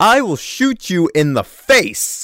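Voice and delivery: slow, drawn-out tough-guy voice, wide pitch swings. Joking that a character will start the Pulp Fiction monologue: Samuel L. Jackson impression. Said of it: "start giving Samuel L. Jackson's monologue from Pulp Fiction".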